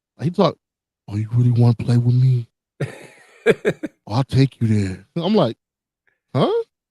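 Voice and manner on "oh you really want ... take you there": plain, ordinary talking voice without bravado. Talking about a wrestler's voice, the speaker imitates Solo, a non-wrestler voice. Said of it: "he doesn't have a wrestler's voice".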